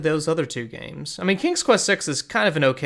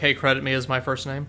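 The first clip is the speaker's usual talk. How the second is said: plain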